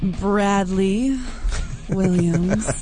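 sexy, sultry delivery. Host introducing tonight's guest by name, said all sexy. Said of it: "she said it all sexy".

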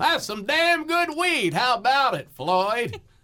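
very high-pitched comic character voice. Starting an old comedy bit from the 80s, the speaker does a Barney Fife impression. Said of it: "Starting off with Barney Fife".

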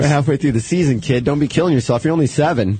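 ordinary delivery

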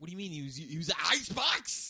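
put-on outraged shout.

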